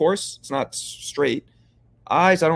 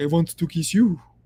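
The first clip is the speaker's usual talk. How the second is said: horrible, awful put-on French accent; 3 semitones higher than usual. Joking to another speaker about speaking french: horrible french accent. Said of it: "It also was a horrible accent".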